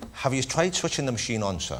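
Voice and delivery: soft, put-on Irish accent. Improvising as an IT manager in Ireland, in an Irish accent. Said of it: "an Irish person today would say".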